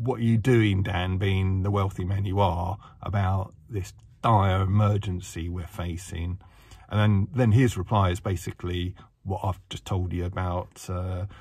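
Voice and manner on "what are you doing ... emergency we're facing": plain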